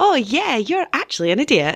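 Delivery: acted sweetly snide, falsely cheerful, sing-song swoops. Speaker acts out a passive-aggressive message, mock-cheery passive-aggressive. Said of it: "cheery, passive aggressive".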